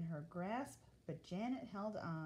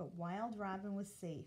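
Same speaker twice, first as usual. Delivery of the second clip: ordinary delivery, nothing marked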